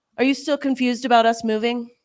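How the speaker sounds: patronizing, talking-down condescending tone. Retelling a husband's reply to his wife, imitating condescending tone.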